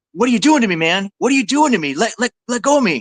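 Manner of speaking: high-pitched screaming outburst. Telling a story, the speaker acts out a guy who confronted them: imitating someone screaming. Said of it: "this guy starts screaming".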